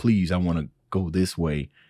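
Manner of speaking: plain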